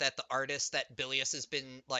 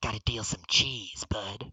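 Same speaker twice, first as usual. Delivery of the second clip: secretive, conspiratorial, leaning-in stage whisper; 4 semitones lower than usual. Game narrator voices Bilius pulling the player close; Bilius half-whispering. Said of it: "like pulls you in his like whispers to you".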